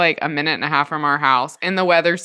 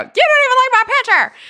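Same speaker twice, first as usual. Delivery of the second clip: acted, very high, shrill, upset child yell; 5 dB louder than usual. Retelling what a kid yelled through the car window: imitating a kid yelling. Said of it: "literally yelling at me through the window".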